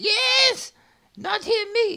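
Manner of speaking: shrill, very high goblin cry. Narrating to the players, the speaker voices another goblin yelling, goblin yelling. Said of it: "Another one yells out".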